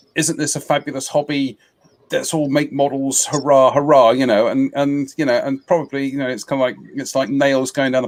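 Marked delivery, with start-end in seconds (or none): none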